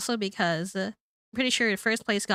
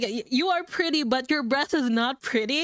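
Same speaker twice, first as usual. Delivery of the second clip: mock patronizing, condescending, talking-down delivery; 5 semitones higher than usual. Imitating a reality tv husband insulting his partner: imitating a condescending tone. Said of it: "in the most condescending tone".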